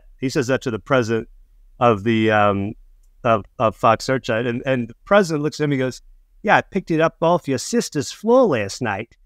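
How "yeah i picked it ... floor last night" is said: put-on slightly raised Australian accent. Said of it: "that was an Australian accent".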